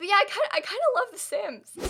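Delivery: very high, tearful voice, crying while talking. Speaker apologizing to viewers for crying in her video, crying while talking. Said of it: "I wasn't gonna cry in this video".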